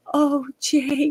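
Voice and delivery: high-pitched ASMR-style voice. Retelling a movie scene where she pleads softly to Jake: ASMR voice imitating Carrie Fisher. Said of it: "you did that, like, A S M R voice".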